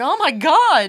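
mock very loud, fretful outburst, high. Teasing a co-speaker about how they sound speaking Dutch, imitating a worried voice. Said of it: "so much worry in your voice".

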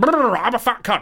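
high, squeaky put-on puppet voice. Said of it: "impression you do of me just sounds like Zippy from Rainbow".

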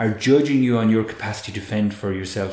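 ordinary delivery

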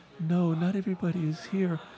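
small, shy, meek, timid little voice. Retelling a bus trip, someone in the back answering, imitating a meek voice. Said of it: "this meek voice in the back go".

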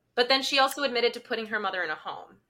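ordinary talk

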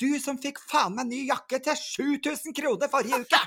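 mock high-pitched, shrill, loud, furious outburst. Retelling how mom came in and what she said, imitating someone furious. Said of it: "så var hun jo rasende".

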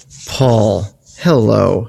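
low, subdued character voice. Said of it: "I said that in my subdued Uncle Leo voice".

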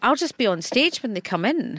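ordinary talk

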